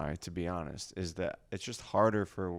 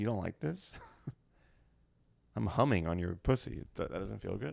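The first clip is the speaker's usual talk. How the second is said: rough, creaky, inept-sounding guy voice. Explaining why guys are bad at it, doing an impression of a guy. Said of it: "He's like".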